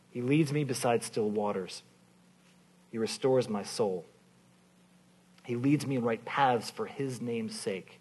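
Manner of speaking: slow reading with long pauses between lines.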